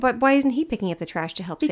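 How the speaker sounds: ordinary delivery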